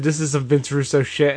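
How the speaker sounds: ordinary delivery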